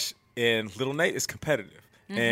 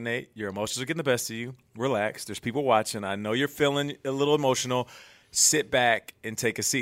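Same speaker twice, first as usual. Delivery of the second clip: ordinary talk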